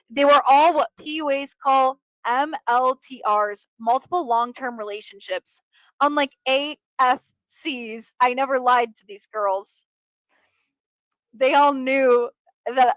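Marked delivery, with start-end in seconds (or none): 6.0-13.0 speech strained by stifled laughter. Speaker goes on telling a story to listeners, holding back laughter. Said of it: "Sorry, I'm laughing".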